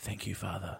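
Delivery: hushed, very quiet whisper. Retelling what a stranger said while taking a photo: retelling a whisper. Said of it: "he just whispered into my ear".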